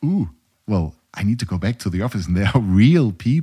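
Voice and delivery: ordinary talk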